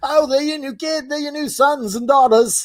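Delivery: put-on British accent, pitched very high. Joking about George Washington coming home to new kids, answering him in a British accent. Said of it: "I'm getting a British accent".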